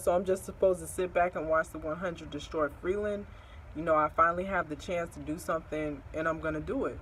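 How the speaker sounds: plain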